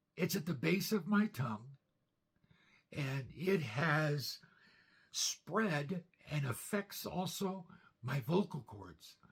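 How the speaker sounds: strained, breathy voice, straining to speak. Describing a cancer diagnosis in an old video: strained, breathy voice. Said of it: "my voice is so strained".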